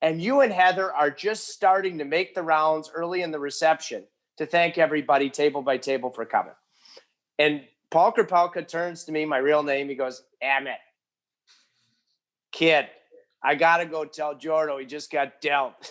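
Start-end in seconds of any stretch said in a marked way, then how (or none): 10.4-15.9 put-on Boston-accented speech. Retelling what the agent said at a wedding reception: Boston accent imitating Paul Krapelka. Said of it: "Boston accent".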